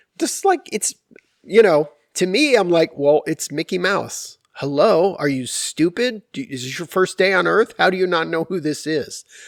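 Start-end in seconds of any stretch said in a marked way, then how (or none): 3.0-9.3 play-acted snotty, rude, bratty little demon child voice. Retelling own words as a three-year-old to a stranger: imitating a rude demon child. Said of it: "this little demon child".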